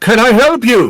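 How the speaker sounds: put-on very high-pitched elderly satyr voice. Voicing an elderly satyr dragging a body, asked to stop: elderly satyr voice. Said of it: "and he goes".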